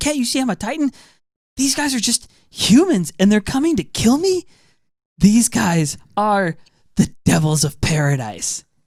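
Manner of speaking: put-on high, drawn-out, stunned, shocked disbelief. Retelling an episode scene where scouts swarm a Titan: imitating a character in shock. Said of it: "in shock".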